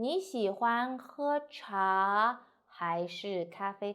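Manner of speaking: slowly, pitch up then down. A teacher models a chinese question sentence for learners, slow, rising then falling. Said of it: "So go up and slowly".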